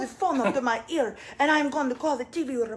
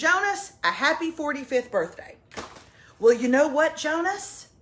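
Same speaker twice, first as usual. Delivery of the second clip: usual speaking voice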